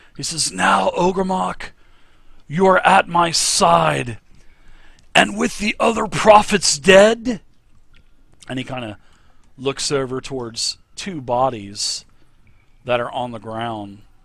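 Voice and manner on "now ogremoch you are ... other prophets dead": very loud, high-pitched, echoing booming voice, side drawn out. The narrator voices a figure in a cavern addressing ogremoch, speaking really loud. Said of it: "he speaks really loud".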